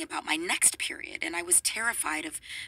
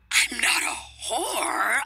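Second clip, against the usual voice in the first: sudden, loud, screeching shriek; 5 semitones higher, 6 dB louder than usual. The narrator answers Big D's suggestion, shrieking. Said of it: "I shrieked".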